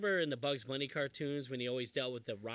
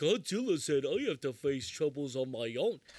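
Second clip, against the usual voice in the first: put-on stupid little monster voice; 3 dB louder than usual. Recalling the American dub, imitating the little Godzilla's voice: Minilla dub voice. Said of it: "That's a literal voice".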